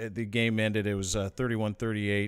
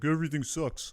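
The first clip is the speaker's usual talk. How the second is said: sullen, fed-up, miserable, pitched-up complaining tone; 6 semitones higher than usual. Retelling what a co-host said on last week's podcast: imitating Offner. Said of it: "That was a pretty good impression".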